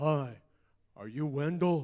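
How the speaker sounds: put-on very loud, big, booming little-girl voice. Retelling what a six-year-old girl asked him, in Kelly Joy Butler's deep booming voice. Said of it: "this deep, booming voice".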